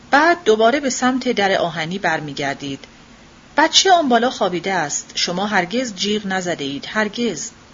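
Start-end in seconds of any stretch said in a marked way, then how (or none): none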